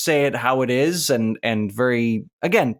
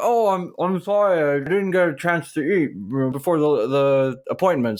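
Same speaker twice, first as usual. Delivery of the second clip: words pushed around a mouthful, muffled; 3 semitones higher than usual. Retelling how a masseuse answered the door, imitating talking with mouth full. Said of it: "She opens the door with her mouth full of food".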